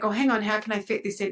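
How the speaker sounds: usual speaking voice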